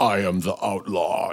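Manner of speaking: slow, deliberate voice with each word drawn out. Speaker describing how he'd have dubbed over a film character's voice, James Earl Jones deep voice. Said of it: "found like a James Earl Jonesy deep".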